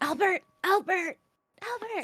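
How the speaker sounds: very high, hushed, carrying stage whisper. Calling to albert while heading towards him as he comes along the red carpet, in a stage whisper. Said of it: "I'll just like stage whispering".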